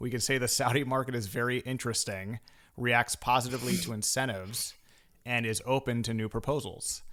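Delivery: ordinary talk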